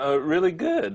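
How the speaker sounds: voice cracking up high, slow.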